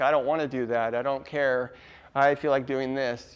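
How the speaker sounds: ordinary talk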